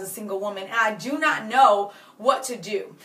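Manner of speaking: plain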